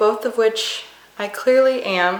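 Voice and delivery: ordinary talk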